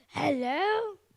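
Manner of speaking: furious, very loud voice. During a tonality demonstration, saying hello: angry hello. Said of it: "say hello in an angry way".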